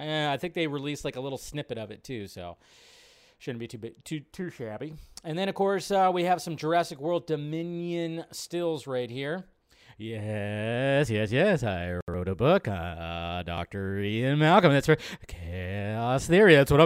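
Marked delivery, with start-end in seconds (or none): 10.0-16.9 badly done, with a stretched-out "uh". Describing Jurassic World Dominion stills, doing a terrible Jeff Goldblum impression. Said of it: "that's my terrible, uh, Jeff Goldblum impression".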